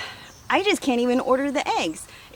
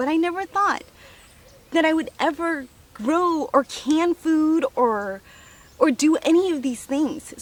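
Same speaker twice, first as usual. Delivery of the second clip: overcome, tearful, emotionally moved voice; 3 semitones higher than usual. Speaker reflects on what they have managed to do; emotional. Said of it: "I don't know why I'm getting so emotional".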